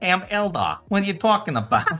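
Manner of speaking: put-on New Jersey Italian gangster accent. Asked to do an accent, the speaker tries a New Jersey Italian gangster accent. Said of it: "like the old Italian gangster".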